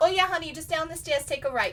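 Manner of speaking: put-on New York accent, high. Retelling giving wedding directions to guests, answering in a fake new york accent. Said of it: "I like fell into this like fake New York accent".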